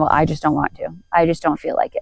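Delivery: ordinary delivery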